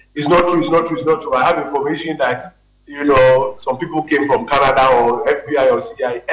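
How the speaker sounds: usual speaking voice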